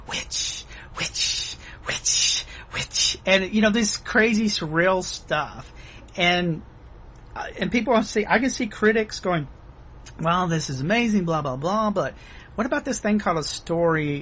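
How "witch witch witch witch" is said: hushed, slow, drawn-out repeated whisper. Describing scenes in a film, quoting a man who is whispering. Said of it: "he's just whispering".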